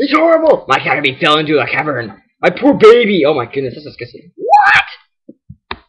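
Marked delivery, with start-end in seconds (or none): 0.0-3.2 put-on creature voice. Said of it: "Sorry, wrong voice".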